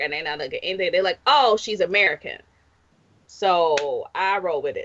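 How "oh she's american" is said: usual speaking voice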